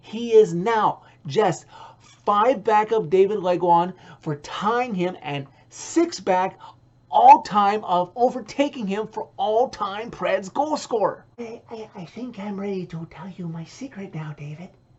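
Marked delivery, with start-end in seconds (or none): 11.3-14.7 hushed, secretive, confiding half-whisper. Broadcaster telling his co-host David he is ready to share a secret: half-whispering. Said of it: "why are you whispering".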